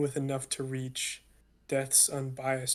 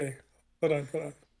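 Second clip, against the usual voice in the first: giggling while talking. Before reading one of their poems, the speaker pauses, giggling while talking. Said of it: "now I have the giggles".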